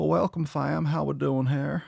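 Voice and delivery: rough, creaky, gravelly voice. Welcoming viewers back to the show in a Bill Clinton voice. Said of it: "kinda pull the Bill Clinton".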